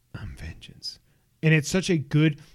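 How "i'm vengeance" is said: very quiet, breathy whisper. Retelling a trailer moment, the speaker quotes the hero's line in a Batman voice. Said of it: "in his batman voice".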